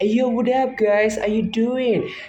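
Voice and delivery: breezy, easygoing American accent. Showing how they switch from their English into American: casual American accent. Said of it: "when I switch it up into American and I say".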